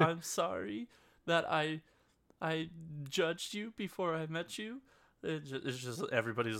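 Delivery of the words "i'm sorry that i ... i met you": mock, high, slow blubbering through tears. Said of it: "starts bawling and starts talking in".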